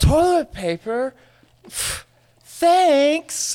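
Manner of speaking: mock, very high, overjoyed, delighted toddler voice. Retelling his one-year-old nephew opening a toilet-paper gift, imitating a very happy nephew. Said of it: "and like was just so happy about it".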